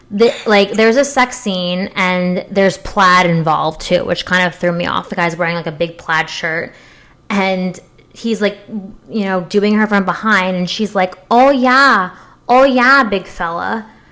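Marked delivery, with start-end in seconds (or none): 11.3-13.8 put-on, drawn-out Midwestern accent, pitched up. Retelling what a woman in a sex scene said, Midwestern accent. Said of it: "the Midwestern accent in the middle of coitus".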